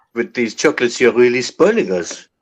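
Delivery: put-on French accent, sounding true. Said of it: "you have to have that true fucking French accent. You just did it".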